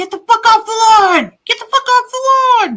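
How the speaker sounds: shrill very high yelling. Joking that the dog could chase kids off the lawn, mock-yelling as Nico. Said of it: "Nico can be yelling at them to say".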